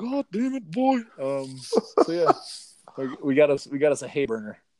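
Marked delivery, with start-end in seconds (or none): 0.0-1.0 very high-pitched dad voice. Quoting his dad about the new horse, imitating his dad as Hank Hill. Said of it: "he's Hank Hill".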